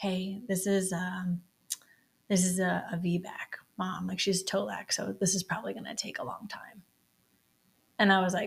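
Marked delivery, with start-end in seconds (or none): 0.0-6.8 put-on whisper, lower pitch. Retelling a nurse's remark overheard during labor: imitating a whisper. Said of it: "I hear her whisper".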